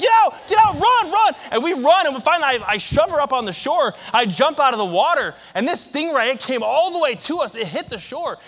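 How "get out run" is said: acted yell, much higher and slower. Retelling getting his wife out of the water, retelling his yell. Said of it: "I'm yelling".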